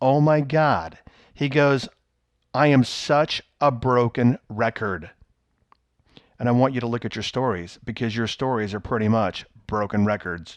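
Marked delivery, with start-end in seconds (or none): none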